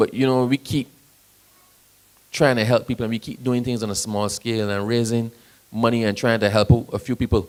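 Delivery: ordinary delivery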